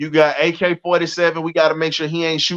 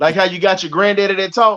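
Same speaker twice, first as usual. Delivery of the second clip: plain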